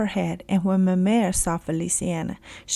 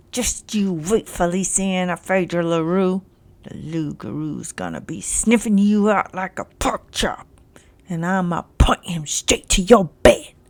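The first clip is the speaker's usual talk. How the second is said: words squeezed out through gritted, clenched teeth. A narrator reads Jacques glaring at Feliciana and speaking, through gritted teeth. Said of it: "said through gritted teeth".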